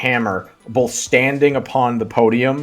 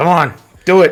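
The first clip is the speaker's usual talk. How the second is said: raised, pitched-up taunting; 5 semitones higher, 6 dB louder than usual. Voicing gym bros in the crowd urging a player on: egging someone on. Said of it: "egging you on".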